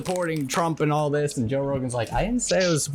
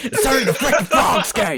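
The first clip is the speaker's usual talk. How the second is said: high, loud, insistent declaiming outburst; 8 semitones higher, 6 dB louder than usual. Quoting a favorite line the way Alex says it: Alex Jones voice. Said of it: "if it's gonna be Alex".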